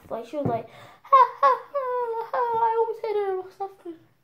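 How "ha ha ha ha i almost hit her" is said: mocking, high-pitched laughter. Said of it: "decided to laugh".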